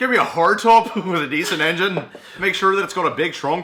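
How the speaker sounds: belted out high with an odd Irish tinge. Quoting a film line, doing a weird Irish Dwight voice. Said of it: "That's a weird Irish Dwight I did".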